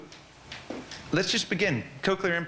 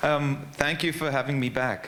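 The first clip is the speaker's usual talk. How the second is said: ordinary delivery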